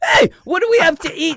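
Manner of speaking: put-on Scottish accent. Retelling what a character said, Scottish impersonation. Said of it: "That's my Scottish, uh, impersonation".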